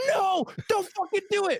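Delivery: put-on very high, loud screaming. Retelling yelling at a deer from the car, retelling own scream. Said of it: "I'm like fucking screaming".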